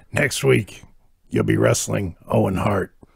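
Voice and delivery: low, gravelly growling. Retelling what Sarge said to a grinning wrestler, Sergeant Slaughter impression. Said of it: "It's actually a very good Sergeant Slaughter impression".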